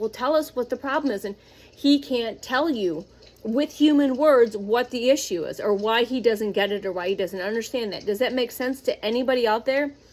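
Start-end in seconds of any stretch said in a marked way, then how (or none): 0.0-1.2 put-on demanding, barking voice. Retelling how they demand answers from him: imitating someone barking orders. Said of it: "they're barking at him like".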